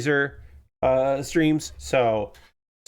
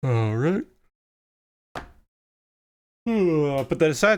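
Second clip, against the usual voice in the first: sleepy, talking through a yawn. Changing topic while tired, yawning. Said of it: "sorry I'm yawning".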